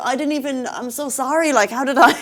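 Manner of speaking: mock dazed, scattered voice. Retelling how a bag thief apologized: imitating someone dazed. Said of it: "he was nearly out of it in a way".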